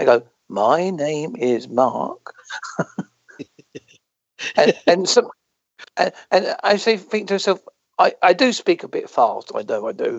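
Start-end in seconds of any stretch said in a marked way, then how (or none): 0.5-2.3 very slow, careful, stretched-out words. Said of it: "I have to talk a bit slower now".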